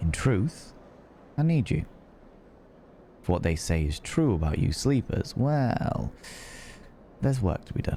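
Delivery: dropped, grave, dark confiding undertone. A character speaks to the listener, a sleeper: lowered voice. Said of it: "He lowers his voice and gives you a dark look".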